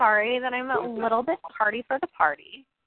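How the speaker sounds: ordinary talk, nothing marked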